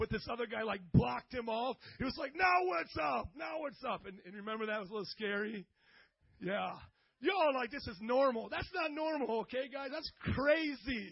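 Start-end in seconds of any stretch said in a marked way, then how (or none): 2.3-4.0 put-on young man screaming, high-pitched. Speaker retells a young guy screaming at an old man in traffic, imitating a young guy screaming. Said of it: "a young guy screaming at".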